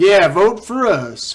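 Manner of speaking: loud, slow, mocking sales-pitch tone.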